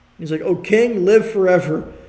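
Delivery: ordinary talk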